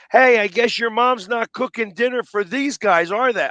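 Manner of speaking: put-on, very high, shrill, taunting yell. Retelling yelling at a player as a fan in the eighth inning, retelling a heckling yell. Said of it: "I'm down there and I'm yelling at him like".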